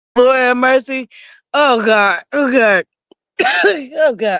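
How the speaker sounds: coughing through laughter. Apologizing to viewers after choking, laughing while choking. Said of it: "I can't laugh while I'm choking".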